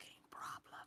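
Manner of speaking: hushed, unvoiced whisper. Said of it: "I say in psychic communication".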